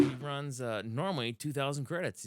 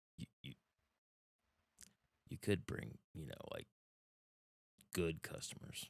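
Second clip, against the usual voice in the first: hushed voice, lower and quieter; 9 semitones lower, 14 dB quieter than usual. Voicing a shopkeeper eyeing the customers: speaking really quietly. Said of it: "he says really quietly".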